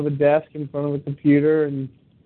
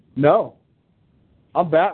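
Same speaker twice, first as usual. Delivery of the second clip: put-on child voice, very serious tone. Retelling what a child answered when caught on the couch: imitating a kid saying it very seriously. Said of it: "he was very serious when he said it".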